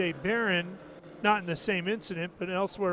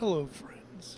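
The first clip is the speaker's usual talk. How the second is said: hushed, breathy, soft announcer voice; 5 dB quieter than usual. In the Speedway booth, showing a golf announcer voice: Jim Nantz golf announcer voice. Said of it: "Do you have a good golf announcer voice?".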